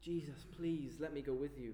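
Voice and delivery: put-on desperate begging man's voice. Retelling how a rescued man begs Jesus, acting out a man begging. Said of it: "he begs".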